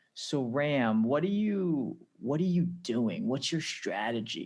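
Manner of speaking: poor, clumsy, put-on American accent. Retelling what an organization's president asked: poor US accent. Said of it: "I know that was a poor U-, U S accent".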